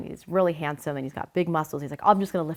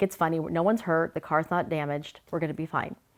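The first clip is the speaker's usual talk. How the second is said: ordinary talk, nothing marked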